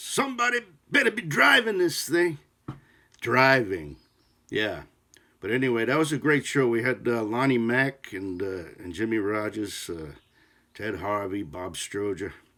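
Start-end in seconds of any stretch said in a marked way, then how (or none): 0.0-2.4 very high, loud, frightened shout. Recalling a drummer scared of flying, rows behind you on the plane, imitating a scared flyer's loud voice. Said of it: "I could hear in a loud voice".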